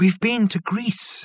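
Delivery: small, high voice full of awe and wonder. Narrator reads the girl answering Watkin, in a small but awed voice. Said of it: "announced the girl in a small but awed voice".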